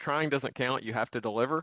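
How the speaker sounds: ordinary delivery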